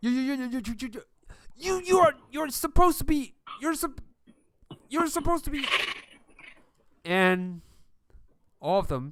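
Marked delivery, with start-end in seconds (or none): 0.0-5.6 high-pitched, frightened, terrified stutter. Voicing a frightened guard facing a winged reaper: terrified stammering guard. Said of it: "They can't even form a proper sentence".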